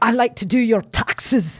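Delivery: line in a put-on Irish accent. Describing a man whispering in a woman's ear: Irish accent. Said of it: "what he says in an Irish accent".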